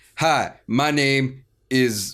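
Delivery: hesitant, put-on cop voice. Imitating how the character would talk at a drug deal: imitating Uncle Mace, pauses between words. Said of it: "there's pauses in between words".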